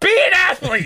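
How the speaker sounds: put-on very high-pitched screaming outburst. Recalling getting a painful blood blister, the speaker re-enacts it: retelling a scream. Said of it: "So I screamed".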